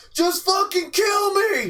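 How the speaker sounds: mock yelling. Retelling a street fight, a man in a chokehold: imitating someone yelling. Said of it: "he just kept yelling".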